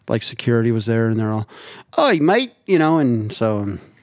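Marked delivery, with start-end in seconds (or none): 1.9-3.0 put-on Australian accent, pitched up. Retelling what security said after the speaker ran over to help, australian accent. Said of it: "that was my Australian accent right there".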